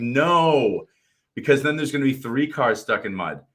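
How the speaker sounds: drawn-out high "no". Retelling a safari where a driver tried to pull out stuck cars, retelling own screaming. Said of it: "And I'm screaming".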